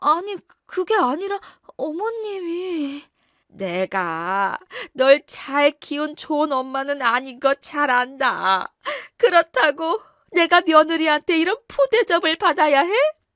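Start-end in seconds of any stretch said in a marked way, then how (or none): 3.5-12.9 tearful, crying speech through sobs. A mother complains to her son about her daughter-in-law's treatment, crying while talking. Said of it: "울지 말아요".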